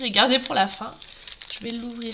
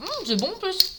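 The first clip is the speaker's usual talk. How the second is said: pitched-up talk while chewing, mouth stuffed; 8 semitones higher, 3 dB quieter than usual. Tasting something edible mid-conversation, talking with mouth full. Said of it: "C'est pas bien de vous parler la bouche pleine".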